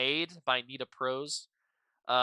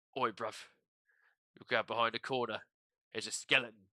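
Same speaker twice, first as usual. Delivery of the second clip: Cockney British accent, London pronunciation; 2 semitones lower, 6 dB quieter than usual. Explaining a dropped-t way of saying skeleton: cockney british accent. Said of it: "that's like the Cockney British pronunciation. It's like".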